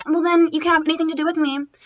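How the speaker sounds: ordinary delivery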